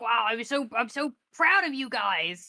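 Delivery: orc character voice, pleased and impressed. Retelling how the orc praised the crew: imitating Quinn the orc. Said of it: "He said it exactly like that".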